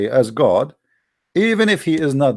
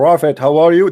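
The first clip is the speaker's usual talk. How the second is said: loud, offhand, casual raised voice; 5 dB louder than usual. Explaining the rules for addressing the messenger, a speaker shows the wrong way: speaking too loudly. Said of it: "That's not right".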